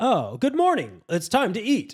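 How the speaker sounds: very high, swooping, stiff dubbed-dialogue delivery. Complaining about English dubs, mocking stilted English dub dialogue. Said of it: "no one talks like that".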